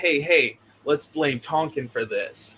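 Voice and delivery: ordinary talk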